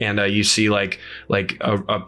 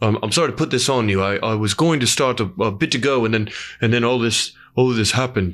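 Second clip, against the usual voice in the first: slight crying in the voice. Game master voicing Kikis, chopping onions as the players come in, crying a little. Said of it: "he's crying a little bit".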